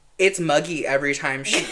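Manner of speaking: plain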